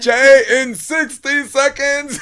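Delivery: very high, very slow, drawn-out scream. Retelling what someone called out: imitating a scream. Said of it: "And he just screamed".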